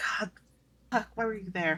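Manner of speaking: private, soft, grumbling mutter under the breath. A player voicing her character as she casts a spell: muttering under breath. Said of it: "mutters under her breath of like".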